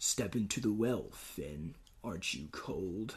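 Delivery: very low, slow, drawn-out scary voice. Recalling a scary scene from the show, quoting the Lich: scary Lich voice. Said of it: "That was pretty scary".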